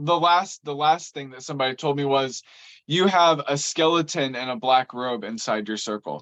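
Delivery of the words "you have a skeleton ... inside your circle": ordinary delivery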